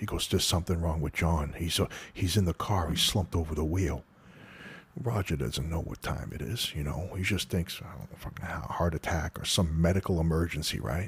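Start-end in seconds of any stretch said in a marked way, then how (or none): none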